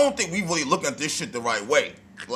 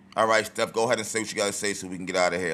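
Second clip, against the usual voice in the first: mock flat, emotionless tone, lower and quieter; 7 semitones lower, 5 dB quieter than usual. Imitating a player who is sitting there after the game: imitating an emotionless voice. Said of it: "she's literally just sitting there emotionless".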